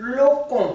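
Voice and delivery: locon with stress on the first o. Showing how to say locon, stress on first O of locon. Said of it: "il faut accentuer ce O là".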